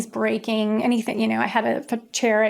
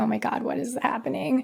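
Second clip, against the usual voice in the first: soft, tearful, put-on crying; 2 semitones higher, 5 dB quieter than usual. Retelling driving away with the spray-painted garment bag: retelling own crying. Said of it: "crying like".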